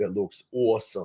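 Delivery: New York Long Island accent. A video maker plugs his other videos, slipping into his Long Island accent. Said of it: "That's my Long Island accent".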